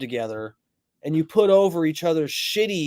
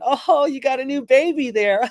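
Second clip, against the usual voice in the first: pitched-up remark spoken through laughter; 8 semitones higher than usual. Retelling how cops arrived at a roadside scene: imitating a cop laughing. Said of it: "laughing and going".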